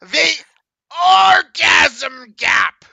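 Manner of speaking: very loud, high, shrill yell. Reading a lesson text aloud to the group: Gilbert Gottfried voice. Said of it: "I was actually envisioning Gilbert Gottfried going this".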